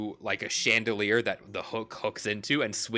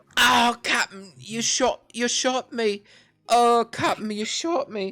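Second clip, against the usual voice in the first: very high, loud wounded cry; 13 semitones higher, 6 dB louder than usual. Voicing a shot pirate calling to his captain: wounded pirate crying out. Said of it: "you hear the shellfish allergic pirate go".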